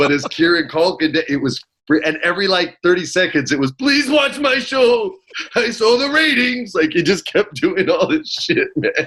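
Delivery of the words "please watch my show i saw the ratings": very high-pitched, celebrity-style voice. Retelling a friend doing an impression of a talk show host. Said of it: "ten minutes of Danza".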